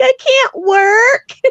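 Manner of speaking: mock, very high little-kid crying whine. Retelling a daughter's reply when told to get a job; imitating crying like a little kid. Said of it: "she starts crying like a little kid".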